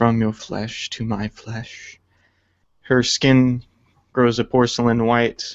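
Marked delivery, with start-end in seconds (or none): 0.0-2.0 hushed whisper spoken low. Narrating a character ingesting glass from her arcane focus, whispered. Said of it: "she whispers".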